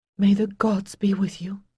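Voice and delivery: hushed whisper. Narrator reads a woman's reluctant farewell to him, whispering. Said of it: "she whispered".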